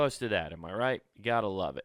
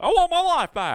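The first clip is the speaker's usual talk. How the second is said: loud, high-pitched, slow begging voice; 10 dB louder than usual. Imitating someone begging for their life back: George Bailey voice. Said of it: "you just turn into George Bailey".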